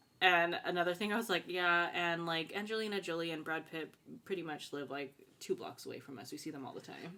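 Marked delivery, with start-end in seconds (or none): none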